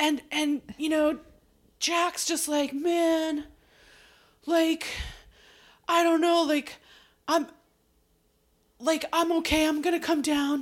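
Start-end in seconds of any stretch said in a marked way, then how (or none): 2.7-10.6 put-on drunk voice, higher pitch. Retelling a scene where Jack answers from the roof: imitating drunk Jack. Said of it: "he's, like, so drunk".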